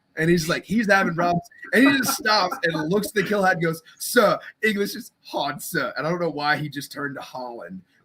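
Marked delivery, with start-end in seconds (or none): 4.0-6.0 slow, put-on non-native English accent. Recalling a fellow recruit at boot camp answering, imitating a foreign accent. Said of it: "it was just like this accent".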